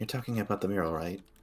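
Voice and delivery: quiet muttering under her breath. Voicing a character asking about the mural: muttering under her breath. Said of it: "she kinda mutters that one under her breath".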